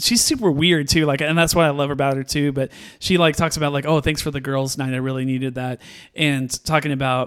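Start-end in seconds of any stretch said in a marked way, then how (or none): none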